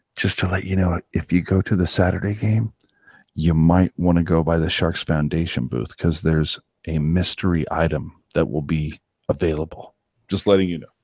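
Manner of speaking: hushed whisper. Speaker confides something to the audience: whispering. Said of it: "I'm just gonna just gonna whisper this".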